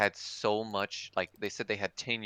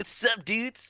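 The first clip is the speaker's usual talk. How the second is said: forced, very high put-on kid voice; 4 dB louder than usual. Trying a kid role voice that would sound off: trying a kid voice. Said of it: "it'd just sound, like, really off".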